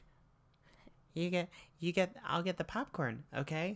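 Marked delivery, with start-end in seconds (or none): 1.1-3.8 high, nervous dorky voice. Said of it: "And he's like".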